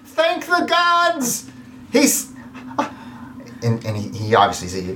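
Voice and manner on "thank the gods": pleading tone, higher pitch. Voicing a naked man trapped under a tree: trapped naked man begging for help. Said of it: "and he's like".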